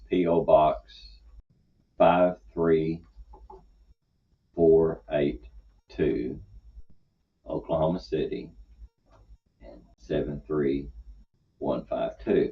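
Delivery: unhurried, deliberately slow, careful delivery. Giving a mailing address over the air: deliberately slow. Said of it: "I want you to notice I go slowly".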